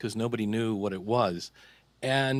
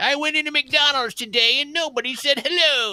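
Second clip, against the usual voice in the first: put-on very high, shrill, grumpy old man griping; 8 dB louder than usual. Recalling how he sounded on his old show, imitating a grumpy old guy. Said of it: "I just sounded like a grumpy old guy".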